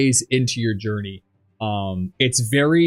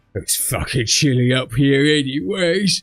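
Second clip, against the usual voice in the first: put-on quiet, mumbled drunken muttering under the breath; 3 semitones higher than usual. A game master voices a hammered character muttering under his breath. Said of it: "mutters under his breath".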